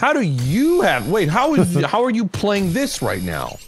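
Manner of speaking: imitated accusatory manner. Retelling how people ask a creator about having a game early, very accusatory. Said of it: "very accusatory".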